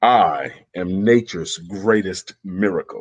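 low, slow, solemn dramatic reading voice. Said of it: "Let me get my reading voice".

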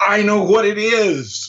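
mock very high, sudden eureka shout. Recalling the moment an idea clicked by the dryer, retelling his own shout. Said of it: "I just shouted out".

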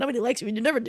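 high, obnoxious, taunting little devil voice. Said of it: "he's gonna be super loud and, like, super obnoxious".

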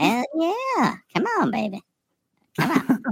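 squeaky, high chipmunk-style cartoon voice. Instead of another fart noise, a show guest does his chipmunk voice. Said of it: "I'll just do my chipmunk voice".

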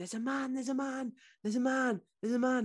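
high screaming cry, over and over, put on. Retelling a mother's account of screaming in sleep: imitating own screaming. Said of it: "I was screaming, going".

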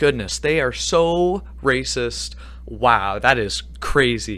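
slow, dripping sarcasm with ironic dismay. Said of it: "That was sarcasm".

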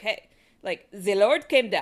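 badly done, put-on German accent. Telling the story of the shepherd Nicholas of Cologne, quoting him in bad German accent. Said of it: "my German accent is not as wonderful as my French accent".

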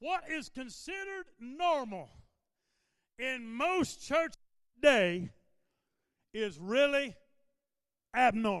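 slow, halting, deliberate delivery. A pastor preaching, announcing he will say it slowly, said slowly. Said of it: "I'm going to say it slowly".

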